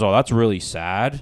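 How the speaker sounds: play-acted condescending, patronizing, talking-down, pitying tone. Retelling what a pamphlet giver said on hearing about atheism: imitating a condescending tone. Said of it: "this guy was the most condescending piece of shit".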